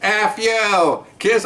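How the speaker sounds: high, squawky parrot voice. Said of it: "all of a sudden the bird says".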